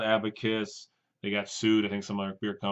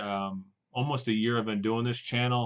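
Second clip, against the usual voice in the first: ordinary delivery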